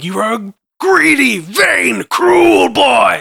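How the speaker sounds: mock-enraged, loud, very slow, furious yell. Retelling a film scene where Odin turns on Thor: imitating Odin screaming. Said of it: "when he screams at him".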